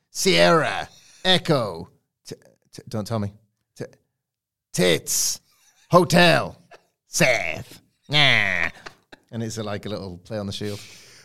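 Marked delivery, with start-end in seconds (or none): 0.2-7.8 cackling voice, very slow. Describing an imagined wrestling entrance, doing Seth Rollins's cackling voice. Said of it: "his cackling voice going".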